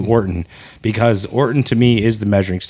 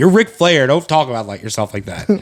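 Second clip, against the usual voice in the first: put-on tearful crying, emotional, pleading half-yell; 3 semitones higher than usual. Recalling watching TV, the speaker reenacts what they yelled: tearful yelling at TV. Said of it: "yelling at the TV, crying, going".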